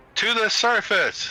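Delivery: most commanding voice, pitched very high. Ordering the undead to go up: most commanding voice. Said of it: "In my most commanding voice".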